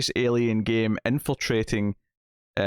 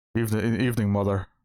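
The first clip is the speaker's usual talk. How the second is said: put-on, deep-voiced American accent. Imitating a grown-up character greeting his mother: deep american voice. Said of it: "my deep American voice is Adam Driver-esque".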